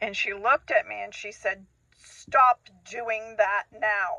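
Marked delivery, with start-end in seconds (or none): 2.0-4.2 slow, gruff, angry voice. Retelling what mom said when the speaker cried, imitating mom's gruff angry voice. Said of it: "in a real gruff and angry voice".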